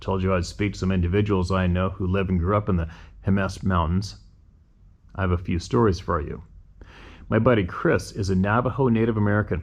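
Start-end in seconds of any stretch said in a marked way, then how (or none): none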